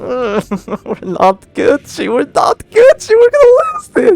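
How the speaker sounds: voice cracking and breaking up, very high. A player mid-game sees the match going badly, voice cracking. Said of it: "the voice crack".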